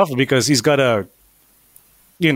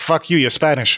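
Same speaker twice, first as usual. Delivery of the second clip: plain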